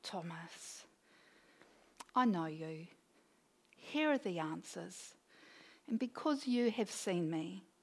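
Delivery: tender, kindly, knowing tone, gentle, low and soft. Speaker imagines Jesus answering Thomas, voicing him with a put-on gentle smile. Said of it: "Just this gentle smile saying".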